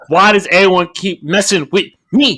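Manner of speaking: small, high, pushed-out voice. Retelling a viral clip casting Katt Williams as Doctor Doom: Katt Williams voice. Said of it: "the little Cat Williams voice".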